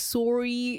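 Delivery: "sorry" said with a Canadian accent. Describing how Canadians pronounce words, imitating it: Canadian accent on "sorry". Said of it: "and like sorry is like sorry".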